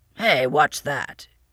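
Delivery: gruff, exclaiming voice. Narrator reading the old man as Heidi holds out her hand; gruff exclamation. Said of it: "he exclaimed gruffly".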